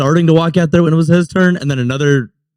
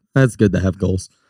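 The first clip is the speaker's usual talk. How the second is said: very low, totally deadpan delivery; 8 semitones lower than usual. Quoting a movie line as Bill Murray: Bill Murray deadpan delivery. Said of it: "Bill Murray just deadpan".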